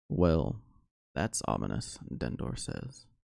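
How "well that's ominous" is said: deep, gravelly voice, dropped low and grinding. Telling the story, voicing Dendor reacting to the closing gates: deep, gravelly Dendor voice. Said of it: "Deep, gravelly voice".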